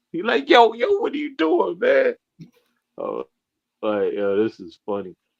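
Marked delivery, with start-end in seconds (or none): 0.5-2.2 very high, raspy, rough screaming yell. Describing a man screaming at the tv: imitating someone screaming at tv. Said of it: "He's like screaming at the T V".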